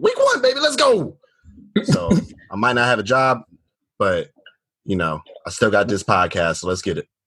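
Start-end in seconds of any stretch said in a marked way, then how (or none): 0.0-1.2 play-acted very high, hyped shriek of excitement. A podcaster retells screaming at customers at work, re-enacting own screaming. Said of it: "I just started screaming at their ass".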